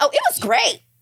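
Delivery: mock effusive gush, very high-pitched. Retelling what a date said about an ex: imitating a date's gushing reply. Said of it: "he said it with so much".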